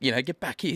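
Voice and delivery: put-on, shouted, high-pitched yell. Retelling calling out to mates during a car mishap, retelling own yell. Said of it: "I'm yelling out to my mates".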